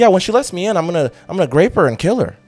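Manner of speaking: mock casual, unbothered, calm, even, slightly high. Retelling the stranger's words on the doorbell camera: imitating a calm tone. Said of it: "and he's saying it so calm".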